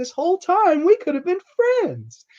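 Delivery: put-on very high, sing-song childlike voice. Retelling a film scene where Bette Davis says it like a child. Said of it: "she says it like a child".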